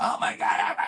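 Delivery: put-on screaming voice. Retelling how an elderly father reacted at the hospital: imitating someone screaming. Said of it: "he immediately starts screaming, like".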